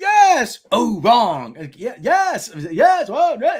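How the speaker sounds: very slow, swooping speech with stress on wrong words. Mocking a game show host's sense of emphasis: imitating LeVar Burton's misplaced emphasis. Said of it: "he did not know where to put an emphasis on anything".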